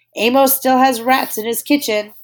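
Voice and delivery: big, high, booming loud voice. Narrator reading a story, voicing the cook searching the kitchen, booming. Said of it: "he boomed".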